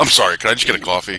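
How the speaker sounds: mild, polite, calm, normal man's voice. Retelling a drive-through video after a scream: imitating a calm guy voice. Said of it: "normal ca-, calm guy voice".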